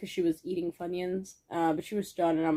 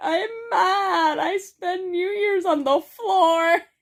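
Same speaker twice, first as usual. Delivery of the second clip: acted, forlorn, sad, very high raised voice, drawn out; 11 semitones higher, 5 dB louder than usual. Retelling what a friend said after passing out on New Year's: imitating Chris sounding sad. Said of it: "all sad".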